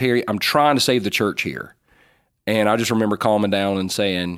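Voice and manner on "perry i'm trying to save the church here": mock raised voice, speaking up hard. Retelling words said to him during a church controversy: imitating a raised voice. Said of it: "he raised his voice".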